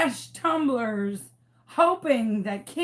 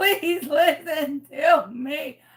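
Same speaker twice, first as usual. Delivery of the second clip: high, slow, tearful, close to crying; 5 semitones higher than usual. Retelling how she begged everyone to listen to her: acting out her tearful plea. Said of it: "I was almost in tears on the porch".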